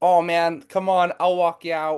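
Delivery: put-on American accent. Joining in on another speaker's story, quoting a man: american accent impression. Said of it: "do the American accent".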